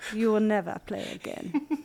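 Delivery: line in a put-on German accent. Retelling what Pia said after the first cap: imitating Pia in a German accent. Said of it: "I don't know why she's German".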